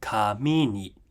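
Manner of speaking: pitch rise on kami, low pitch on ni. Teaching Japanese pitch with a particle: pitch drops low on ni. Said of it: "We go up and then we come back down when we have a particle".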